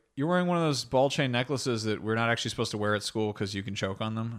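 ordinary delivery

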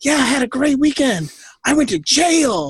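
mock, high, far too cheerful, "jail" drawn out. Retelling a friend's reply about the weekend: imitating someone way too happy. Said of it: "you were way too happy about that".

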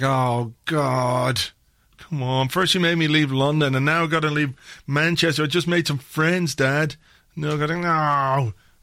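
mock miserable child voice. Voicing a player's son in a photo who looks unhappy: imitating an unhappy son. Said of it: "he looks desperately unhappy all the time".

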